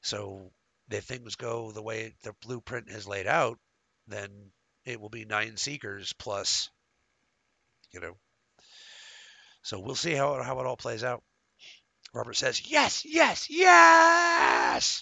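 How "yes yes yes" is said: last yes stressed hardest. Quoting someone's reply, with extra emphasis on the last yes. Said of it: "I put the extra emphasis on the last yes".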